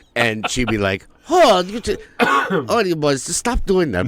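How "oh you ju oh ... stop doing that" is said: very high put-on little-old-lady accent. Retelling what a teacher said to boys faking falls: imitating Rita Ebel's accent. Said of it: "I don't know where I'm getting this fucking".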